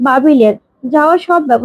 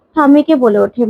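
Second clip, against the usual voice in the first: usual speaking voice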